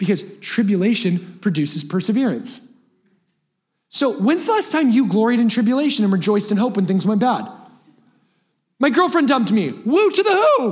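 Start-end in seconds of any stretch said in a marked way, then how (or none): 9.7-10.7 very high, slow voice cracking way up. Speaker cheers after saying his girlfriend dumped him, voice cracking. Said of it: "My voice cracked".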